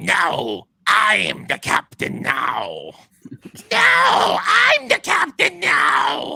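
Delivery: very high, rough screech. Narrator voicing figures heard scuffling on the top deck; screechy voices. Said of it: "these screechy voices say".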